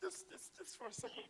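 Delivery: moved, emotional, hushed near-whisper. Interviewer pausing while interviewing a guest, getting emotional. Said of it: "I'm getting emotional here".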